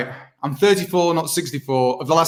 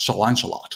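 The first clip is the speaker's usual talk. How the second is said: put-on cheeky Scottish voice, lower and quieter; 6 semitones lower, 5 dB quieter than usual. Quoting an actor playing King Arthur: Sean Connery as King Arthur. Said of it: "the impersonation gets a lot more into his cheeks".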